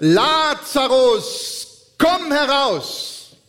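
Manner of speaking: high, slow, loud calling out. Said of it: "rief er mit lauter Stimme".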